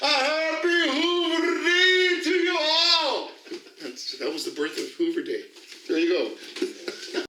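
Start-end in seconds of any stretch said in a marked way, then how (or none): 0.0-3.3 very high, very slow, drawn-out yell. Retelling calling out a window into the courtyard: imitating own past yell. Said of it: "yelled out into".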